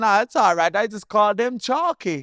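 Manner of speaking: very high, loud put-on broken-English accent. Retelling what grandma said about irish nicknames, in a put-on accent. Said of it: "when I do the as accent".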